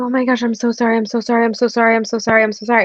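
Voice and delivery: put-on worried voice. Retelling the broom hitting the conductor: imitating own worried apology. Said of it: "I was so worried about him".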